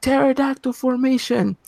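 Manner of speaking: mock sudden yell, pitched very high, coach-like. Telling a story about a school game, quoting the coach: retelling a coach's yell. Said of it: "the coach just yells out of nowhere".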